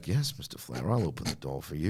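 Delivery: deep, theatrical classical-stage delivery. Recounting a broadcast, quoting Eric Bischoff; mock-Shakespearean Eric Bischoff imitation. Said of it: "he's trying to be Shakespeare".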